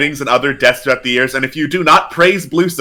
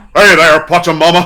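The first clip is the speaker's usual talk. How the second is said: raised, big, booming cartoon-style voice; 3 semitones higher, 5 dB louder than usual. Streamer greeting Pachamama, in a Johnny Bravo voice. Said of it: "with my Johnny Bravo impression".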